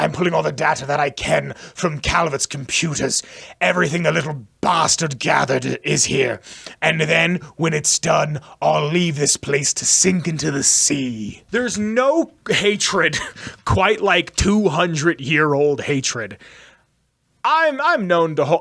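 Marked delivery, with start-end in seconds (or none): 0.0-16.4 put-on spooky British ghoul voice and accent. Speaker recounts what Desmond says, British ghoul accent as Desmond. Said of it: "I'm going to try to do this in a British ghoul accent".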